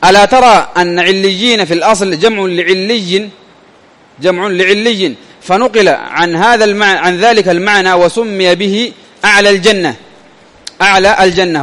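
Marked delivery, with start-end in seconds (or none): none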